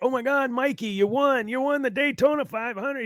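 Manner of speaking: very high, tearful, sobbing announcer-style crying call. Retelling an announcer calling a race win: imitating crying announcer. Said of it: "Darrell Waltrip started crying like".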